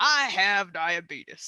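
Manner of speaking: put-on loud voice with country accent. Showing the one accent they can do: Wilford Brimley impression. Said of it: "I got Wilford Brimley".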